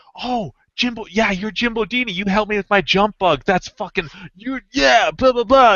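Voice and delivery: eager, excited, high-pitched, rambling gush. Retelling how John recognized the speaker: imitating John's excited talk. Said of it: "he's just all, like, all excited".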